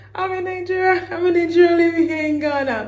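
high, loud, cheerful voice. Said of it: "I'm like".

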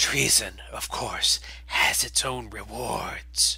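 hissing, sibilant voice. An exile emerges from the cargo bay with loyalist followers, speaking hissing. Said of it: "From the cargo bay emerges the exile vox, [name] of Hatch Cathar, followed by an entourage of Cathar loyalist Nall. They all look fairly lean and ragged from months within the superstructure of the colony vessel. The exile vox is ... hissing softly, and then speaks. "[name], shine on you, glorious c".

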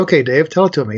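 ordinary talk, nothing marked

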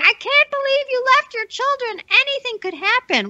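very high, shrieking, high-pitched screaming. Retelling what somebody shouted at a mom at a car: imitating someone screaming. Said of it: "somebody was screaming".

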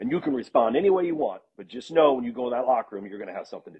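ordinary delivery

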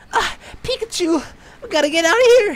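breathless, very high-pitched, loud gasping cry. Reacting to someone's breathing on the audio, doing a breathless Ash Ketchum impression. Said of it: "sounds like freaking Ash Ketchum out of breath".

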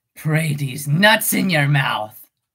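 low cartoon rabbit voice. Asked to say a phrase as Oswald for viewers, Oswald voice. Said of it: "Do you want me to say it as Oswald?".

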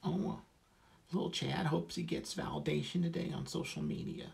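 put-on very high, creaky little-kid baby talk. Speaker showing the voice he uses when posting on social media, baby voice. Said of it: "That's my baby voice".

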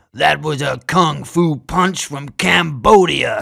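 loud chuckling delivery, words carried on a chuckle. The big man speaks after knocking a man into the wall, chuckling. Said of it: "chuckles the big man".

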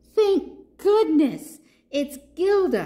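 high exclamation, calling out with a cry. A narrator reads a small character who has landed on a giraffe's head: crying out. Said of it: "cried Papaya".

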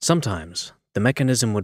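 plain reading voice

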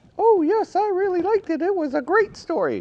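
very high-pitched puppet voice. Asked by the host whether he liked the story, answer in Baba Looey puppet voice. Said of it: "He lives in the cactus house right here".

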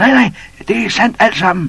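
shrieking, shrill scream pitched way up. A baboon calls down from the tree to a doubting elephant: screaming. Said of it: "skreg bavianen op fra træet".

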